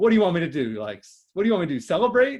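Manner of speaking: normal talking voice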